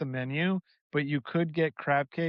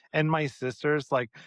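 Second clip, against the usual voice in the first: ordinary delivery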